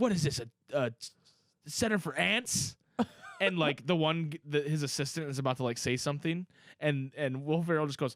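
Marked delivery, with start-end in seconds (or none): 0.0-2.8 dim-witted, clueless character voice. Retelling a film scene: imitating Zoolander. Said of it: "when he's like".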